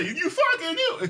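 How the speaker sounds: very high-pitched mimicked woman's voice. Retelling how a woman in a video said the line: imitating Chelsea's delivery. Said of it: "'Cause that's how she said".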